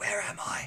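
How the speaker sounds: soft, faint voice, barely above a whisper. Voicing a tiefling who just woke in a cave: barely above a whisper. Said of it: "barely above a whisper".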